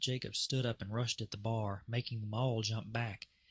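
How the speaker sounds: ordinary delivery, nothing marked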